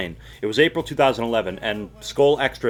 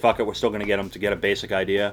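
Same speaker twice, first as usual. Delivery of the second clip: ordinary talk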